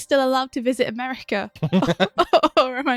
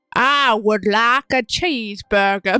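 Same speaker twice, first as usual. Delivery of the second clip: heaviest, thick Southern American accent; 2 semitones lower, 3 dB louder than usual. Ordering a cheeseburger for others to make fun of: heavy Southern accent. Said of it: "In the heaviest southern accent you can".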